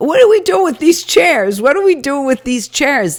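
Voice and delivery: shrill, high-pitched, repeated yelling. Retelling the crowd and self yelling about chairs: retelling own yelling. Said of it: "people start yelling, including me".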